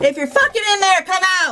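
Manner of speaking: shrill, very loud, high-pitched commanding shout. Told to work on command voice, ordering someone out of a room, commanding shout. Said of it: "Work on your command voice".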